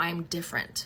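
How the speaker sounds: normal talking voice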